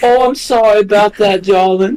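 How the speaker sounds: put-on East Coast accent, woman's voice, very high-pitched. Speaker acts out a lady's reply in a put-on East Coast accent. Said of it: "she sounds like she's from like the East Coast".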